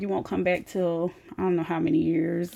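ordinary delivery

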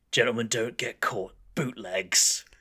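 put-on, shady, working-class British crook's accent. Retelling what a shady character from a side alley says, in a put-on shady criminal accent. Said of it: "I'm sure this accent's classist".

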